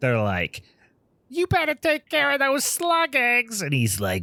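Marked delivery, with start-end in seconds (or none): 1.3-3.6 put-on very high, cartoonish old lady voice. Retelling a movie scene with a cartoonish old couple: imitating a cartoonish old woman. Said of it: "They are straight cartoonish".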